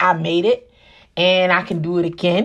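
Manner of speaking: ordinary talk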